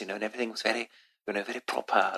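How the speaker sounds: put-on proper old-school British accent. Describing a first speech therapist, a very old british woman: imitating old british therapist's accent. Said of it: "she sort of talked like this".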